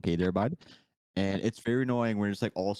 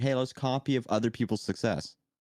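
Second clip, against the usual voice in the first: normal talking voice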